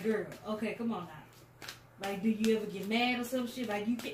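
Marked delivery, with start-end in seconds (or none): 0.0-1.7 slow, mild, easy, unbothered motherly tone. Imitating how her mom says things: imitating her mom's mild voice. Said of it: "the way that she do it".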